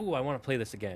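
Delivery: plain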